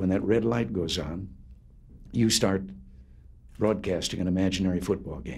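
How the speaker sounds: normal talking voice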